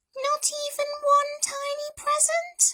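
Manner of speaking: tiny, very high squeaky mouse voice. Narrator voicing Mouse speaking to Bear, squeaky mouse voice. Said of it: "squeaked Mouse".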